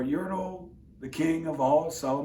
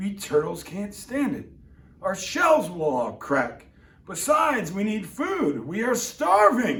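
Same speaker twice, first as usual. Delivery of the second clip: loud, high, pained groaning, pleading tone; 5 semitones higher, 5 dB louder than usual. Reading a story aloud, the bottom turtle complains to King Yertle, Mac the turtle, groaning. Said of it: "and he saw at the bottom a turtle named [name], / And this plain little turtle looked up and he said, Beg your pardon, King [name]. I've pains in my back, in my shoulders and knees. / And this plain l".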